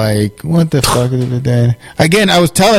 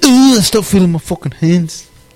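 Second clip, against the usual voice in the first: put-on Scouse accent, higher; 4 semitones higher than usual. Retelling what a man says about losing feeling, in a scouse accent. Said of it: "Why do you make him sound like a scouse?".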